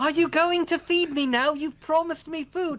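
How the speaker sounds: put-on very high, pleading, begging small-child voice. Playing a poor little kid in an improvised scene, poor pleading little kid voice. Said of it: "your impression of the poor little kid wanting food".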